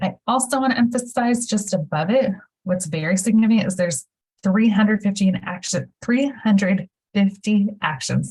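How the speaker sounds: rushed, excited, rapid delivery, words tumbling out too fast. Pointing out a document's count of actions, speaking too quickly. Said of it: "I speak too quickly".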